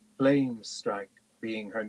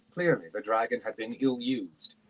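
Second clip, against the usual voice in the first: plain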